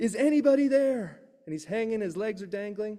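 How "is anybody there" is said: high, loud, desperate yell. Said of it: "and he yells out".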